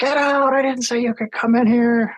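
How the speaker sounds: put-on very high, shrieking, furious old-lady scream. Retelling an old lady running at them as they entered: imitating a screaming old lady. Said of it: "comes running at us and screaming".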